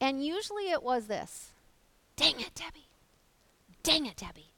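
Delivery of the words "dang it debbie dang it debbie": repeated, grumbling, complaining tone. Retelling how Steve grumbles about messes: imitating Steve grumbling under his breath. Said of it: "grumbling and mumbling under his breath".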